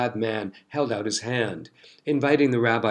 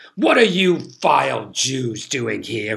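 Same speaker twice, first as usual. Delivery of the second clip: put-on bellowing, furious, outraged drunken roar; 4 dB louder than usual. Narrating a story, voicing a drunk duke confronting unexpected rabbis, roaring. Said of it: "he roared".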